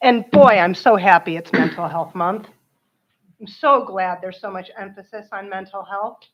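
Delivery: dry, sarcastic tone, saying the opposite. Speaking at public comment about mental health month: sarcastic. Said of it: "why am I so sarcastic?".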